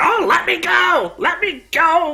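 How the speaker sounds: character voice yell. Voicing a captured druid who begs to be released: character shouting. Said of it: "he starts shouting".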